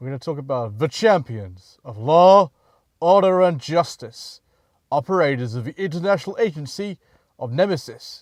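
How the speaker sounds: bad, very loud announcer voice. Doing the introduction to the series' champions: awful David Bauer impression. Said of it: "my awful impression of, uh, actor David Bauer".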